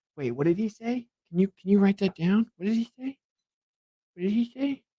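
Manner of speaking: high, mocking put-on voice. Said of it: "being like".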